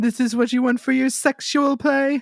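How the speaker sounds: very high cartoon anime character voice. Joking about selling a mask, the speaker talks in an anime character voice. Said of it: "You sound like an anime character".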